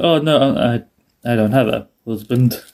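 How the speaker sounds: very slow, deliberate, unhurried, drawn-out. Retelling a line from a scene slowly: imitating a slow line. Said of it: "slowly like".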